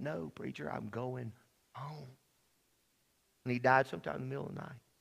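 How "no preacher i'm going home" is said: put-on whisper, lower and quieter. Retelling a dying friend's words in the night: imitating Clyde whispering quietly. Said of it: "he just kept whispering to me real quietly".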